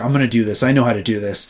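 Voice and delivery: mock cocky bragging tone. Retelling her bragging while learning to bowl: imitating a cocky boast. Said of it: "she got really cocky".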